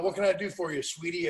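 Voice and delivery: plain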